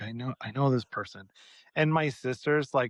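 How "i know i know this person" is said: acted whisper, lower. Retelling telling a sister about recognizing a waiter: imitating own whisper. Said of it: "I whisper to her".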